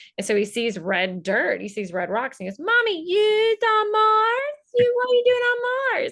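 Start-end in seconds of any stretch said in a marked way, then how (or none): 2.6-6.1 put-on loud, very high, squeaky little toddler voice. A mother retells her toddler son seeing red rocks over FaceTime: little toddler voice. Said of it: "the little toddler voice they have".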